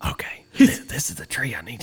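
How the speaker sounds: put-on whisper. Retelling the dude showing which tree he needs: imitating a whisper. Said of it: "Why are we whispering?".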